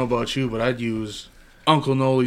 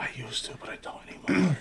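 soft, unvoiced whisper. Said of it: "Let's just whisper about him".

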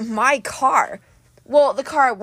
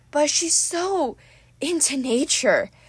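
slow, besotted, lovestruck, swooning delivery; 4 semitones higher, 3 dB quieter than usual. A satyr, teased about being in love, answers swooning. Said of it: "Grover swooned".

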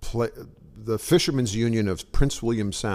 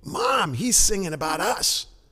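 stage whisper, pitched high; 8 semitones higher than usual. Retelling how a little kid in the front row spoke to her mother, retelling a kid's stage whisper. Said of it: "in a stage whisper says".

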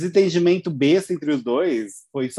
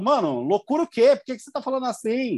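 acted annoyed, prickly, higher-pitched retort; 8 semitones higher than usual. Retelling an argument over a scar: imitating an irritated retort. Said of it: "o D G ficou meio pistola".

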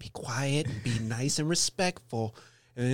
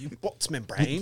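affected British accent, tossed off casually; 3 semitones higher than usual. Showing how the insult should be said, in a british accent. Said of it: "You got to say it like with a British accent".

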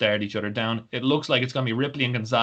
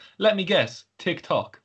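put-on Irish accent with raised pitch; 7 semitones higher than usual. Retelling what a wrestler said in the opening segment: Finn Balor Irish accent. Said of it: "in his beautiful Irish accent".

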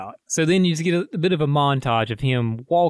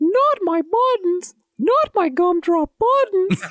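put-on cartoon voice, much higher pitch. After a remark about sounding like the Shrek character, quoting him: Gingerbread Man voice. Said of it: "you just sounded like the gingerbread man in Shrek".

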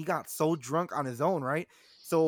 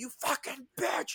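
breathy whispered yell, ranting; 9 semitones higher, 4 dB quieter than usual. Retelling how a guy reacted on hearing she's interested, retelling a yell. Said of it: "He's like just yelling".

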